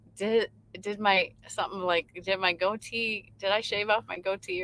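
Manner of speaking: plain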